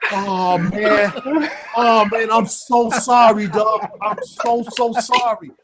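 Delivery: earnest, very slow speech. Retelling how the prank victim apologized, imitating an intense apology. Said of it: "he was almost intense".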